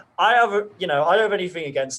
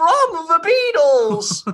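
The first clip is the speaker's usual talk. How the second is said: put-on Liverpool voice, higher and louder; 12 semitones higher, 6 dB louder than usual. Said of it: "I can do a great [name]".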